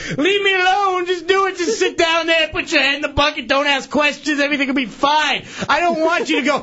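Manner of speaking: high, shouted, exasperated laughing rant.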